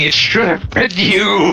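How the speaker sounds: mild, held-back, scream-like half-shouted outburst. Recapping an episode, the speaker acts out Frank's line, imitating Frank screaming. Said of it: "Frank is just screaming".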